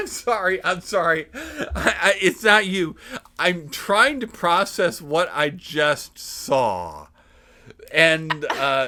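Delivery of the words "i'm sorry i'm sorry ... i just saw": play-acted, very loud, very slow talk through laughter. Retelling a college girl who burst out laughing: imitating someone laughing while talking. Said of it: "burst out in uncontrollable laughter".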